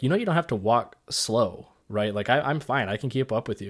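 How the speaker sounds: ordinary talk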